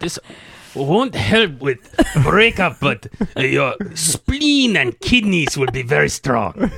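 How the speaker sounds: put-on old person voice. Doing a bit for the others in a put-on old-age accent. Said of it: "What accent was that?".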